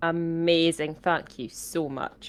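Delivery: very slow, soft, sarcastic-sounding delivery. Thanking a healer after a low healing roll: sounds sarcastic. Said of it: "That sounded sarcastic".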